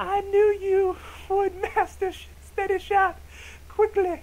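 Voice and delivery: attempted woman voice, very high and slow. Trying a put-on woman voice for a character's line, attempted woman voice. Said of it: "maybe I should do a woman voice".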